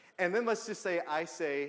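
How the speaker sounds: ordinary talk, nothing marked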